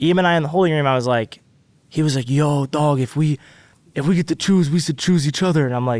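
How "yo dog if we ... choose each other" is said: different voice, done casually. Retelling a talk in the holding room: impression of Eam. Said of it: "that's my E M impression".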